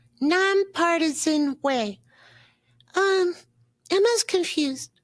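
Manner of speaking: put-on high puppet-like child voice. Reading a comment aloud with the host, speaker answers in Elmo voice.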